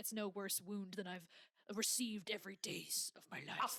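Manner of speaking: put-on moody, brooding voice. Retelling a scene where Shankar answers the maid, mock-moody Shankar impression. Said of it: "this very like moody thing".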